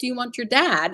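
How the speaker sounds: put-on scolding voice. Retelling how mom got on the speaker's case: imitating mom scolding. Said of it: "she got on my case".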